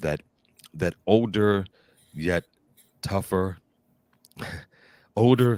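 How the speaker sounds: loud, talking through laughter. Discussing Ben Affleck's Batman with the other speaker, laughing while talking. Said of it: "I'm laughing in the comment".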